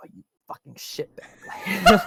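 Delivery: hushed, whispered, muttered swearing under the breath. Describing a woman begging who gets ignored, speaker acts out her cursing under her breath. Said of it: "she curses under her breath".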